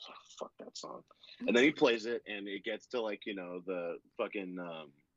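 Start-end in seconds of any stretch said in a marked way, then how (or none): 0.1-1.0 very quiet, whispered mutter under the breath. Retelling what a band member said off the mic: imitating muttering under breath. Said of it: "under his breath".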